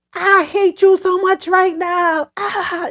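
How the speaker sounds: high, drawn-out put-on scream. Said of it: "And she's screaming".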